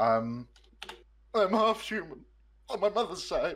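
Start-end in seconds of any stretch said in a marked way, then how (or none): 1.3-3.6 pitched way up, very high fake sobbing voice. Saying a TV movie quote on request while mock crying. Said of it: "can you say a T V movie quote whilst crying?".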